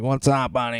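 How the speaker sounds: put-on swaggering, cocky Boston accent, kept soft. Speaker describing a type of city junkie, doing a Boston junkie impression. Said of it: "there's just like this type of distinct junkie".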